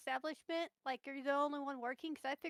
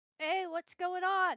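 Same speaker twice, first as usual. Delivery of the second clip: loud, slow calling-out voice. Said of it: "Be like".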